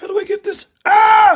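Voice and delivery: flustered panic. Fighting a screen that will not go away: panicking. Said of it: "I'm panicking!".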